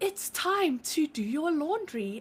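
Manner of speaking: put-on soothing little Irish accent. Imitating a phone assistant reading a reminder: imitating a cute little Irish accent. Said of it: "when it's a cute little Irish accent".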